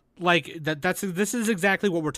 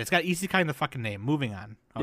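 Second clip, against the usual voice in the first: ordinary talk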